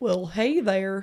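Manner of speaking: Southern American accent. Asked to do a southern accent, speaker attempts it, in an american southern accent. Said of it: "Go on, do your southern one".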